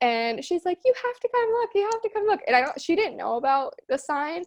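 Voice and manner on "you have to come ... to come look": mock shrill, very high, rushed screaming. Retelling her mom calling her from the kitchen, imitating mom screaming. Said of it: "my mom starts screaming from the kitchen".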